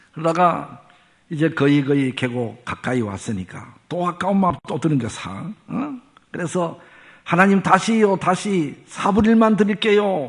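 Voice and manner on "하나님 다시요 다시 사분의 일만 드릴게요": high-pitched, loud shouting. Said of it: "아, 소리".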